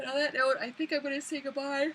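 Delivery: yawning while talking. Sick speaker signing off to viewers, yawning while talking. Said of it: "Sorry for all the yawning".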